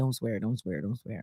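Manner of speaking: low, quiet, soft voice under the breath.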